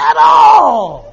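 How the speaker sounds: very high, very loud, rasping shout. Retelling how a friend yelled while riding past: imitating yelling. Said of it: "he yells at me".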